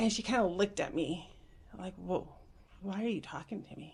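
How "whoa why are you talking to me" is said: startled, caught-off-guard, taken-aback surprise. Retelling a business owner's reaction to a friendly introduction: imitating someone taken aback. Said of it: "but just taken back".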